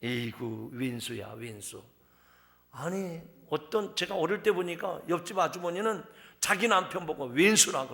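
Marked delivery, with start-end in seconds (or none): 0.0-1.8 Chungcheong accent with tense consonants softened. Demonstrating a common Chungcheong curse, say it in a Chungcheong accent. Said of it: "충청도에 흔한 욕이 있습니다".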